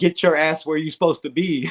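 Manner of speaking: authoritative, firm, no-nonsense commanding tone. Describing a practice report, imitating Kurt yelling at a misaligned player. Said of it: "Kurt yelled at him".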